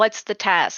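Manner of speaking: said in an angry manner. Shouting up at the hole in character: angry. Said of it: "In an angry manner that I say it".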